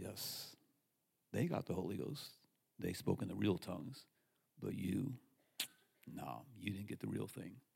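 eerie, small, sinister voice, low and creaky. Recalling a voice heard during a church service, creepy little voice. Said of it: "this little creepy voice says".

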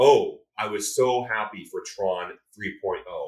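said with clear sarcasm. Answering a question by repeating a comment read on Reddit, quoting it sarcastically. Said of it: "That said in sarcasm".

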